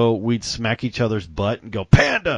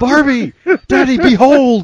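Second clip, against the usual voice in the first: put-on small child voice, higher and louder; 10 dB louder than usual. Retelling what a small child learning to speak said: imitating a small child. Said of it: "when you were just learning to speak".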